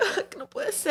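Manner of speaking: put-on sad voice. Imitating another speaker's reaction to bad news: imitating someone sad. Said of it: "You're all sad".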